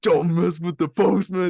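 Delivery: slow, growling tough-guy voice.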